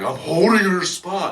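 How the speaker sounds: shrill, high-pitched, loud yelling. Retelling how someone at a show yelled at the group: imitating someone yelling. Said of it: "yelling at us".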